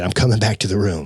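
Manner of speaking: ordinary delivery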